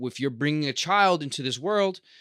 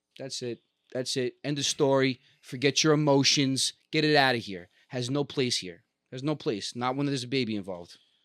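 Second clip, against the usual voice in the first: plain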